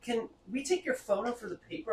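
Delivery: woman's character voice.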